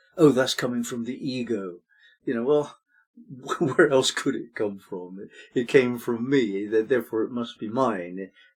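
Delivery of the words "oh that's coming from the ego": slightly disdainful, dismissive tone with faint scorn. Imitating how spiritual teachings talk about the ego: slightly mock-disdainful tone. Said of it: "it's said with a slightly disdainful tone of voice".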